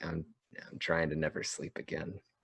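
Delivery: muttering under breath. Retelling own earlier words: retelling a mutter under breath. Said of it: "I just very muttered under my breath".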